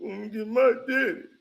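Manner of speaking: frightened, timid, backing-down voice. Mocking a player being yelled at: imitating a scared Brunson.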